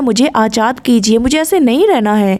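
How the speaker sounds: ordinary delivery, nothing marked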